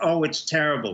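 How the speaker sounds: ordinary talk, nothing marked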